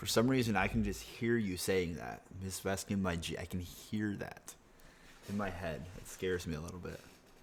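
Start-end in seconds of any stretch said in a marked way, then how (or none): none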